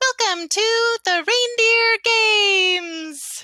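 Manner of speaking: very high, loud, tinny gnome voice, announcer style. A gnome steps up to the microphone to open the reindeer games: very tinny gnome voice. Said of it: "a very tinny voice goes".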